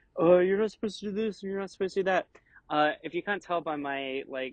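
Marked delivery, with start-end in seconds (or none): 0.2-2.3 acted-out snide, preachy, mocking, sarcastic voice. Imitating online comments that criticized a series: mocking sarcastic tone. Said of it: "sarcastic seeming tone of voice".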